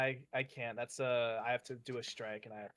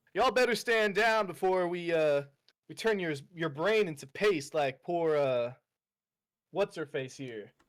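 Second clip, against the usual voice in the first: put-on, very loud, high-pitched yelling; 5 semitones higher, 8 dB louder than usual. Answering the game master's question, yelling a threat at Skeletor in character. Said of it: "or are you just, like, yelling at him?".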